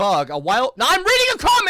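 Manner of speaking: very loud, high, shrill, swooping yell. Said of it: "I'm not trying to yell at you".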